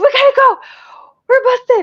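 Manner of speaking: high, loud, urgent panicked voice.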